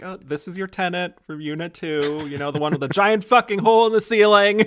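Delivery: mock exasperated, shrill, loud screaming. Retelling a film scene of a woman yelling in line: imitating someone screaming.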